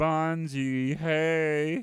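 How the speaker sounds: put-on high cartoon gorilla voice, long stretched "hey". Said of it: "he used to speak like this".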